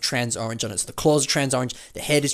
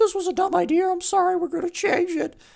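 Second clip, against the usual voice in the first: put-on very high, squeaky pre-puberty teenage voice. Imitating Flickr admitting a mistake: voicing Flickr in a pre-puberty teenage voice. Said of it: "pre-puberty teenage voice there".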